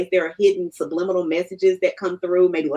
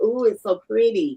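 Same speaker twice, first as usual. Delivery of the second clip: mock admiring cooing "ooh"; 3 semitones higher than usual. Retelling a dream where someone kept admiring a bracelet: imitating someone admiring a bracelet. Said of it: "kept turning the bracelet and going like".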